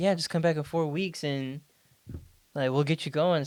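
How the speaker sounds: put-on super happy, cheerful doctor voice. Retelling what a doctor said at a follow-up visit: imitating a super happy doctor. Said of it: "super happy".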